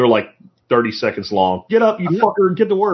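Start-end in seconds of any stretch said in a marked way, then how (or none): 1.7-3.0 high, raised yell. Quoting the other speaker's morning videos: imitating someone yelling. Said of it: "videos where you yell at everybody".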